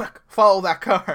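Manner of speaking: slow, loud, urgent barked delivery.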